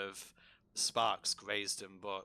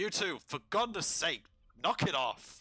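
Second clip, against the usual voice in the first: high-pitched, scolding shout; 8 semitones higher, 4 dB louder than usual. Voicing a character shouting up at two guards: Nighthill shouting at guards. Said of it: "he just shouts up to them".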